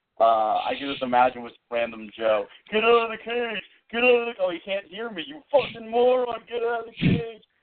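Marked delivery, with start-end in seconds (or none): 2.7-7.4 put-on very high-pitched furious yell. Imagining one of the treehouse people yelling at random Joe, mock-angry yelling. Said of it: "hear them just yelling at each other".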